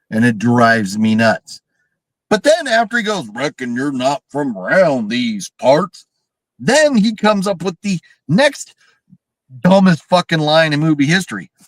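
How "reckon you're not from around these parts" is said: very bad fake rural Southern drawl. Speaker mocking a movie line, quoting a character in fake southern redneck accent. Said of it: "that's the worst fake Southern redneck accent".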